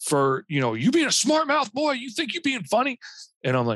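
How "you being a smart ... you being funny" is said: acted-out, very high, furious, enraged cop voice. Retelling a furious police officer scolding a driver: imitating a furious police officer. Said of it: "he gets furious at me".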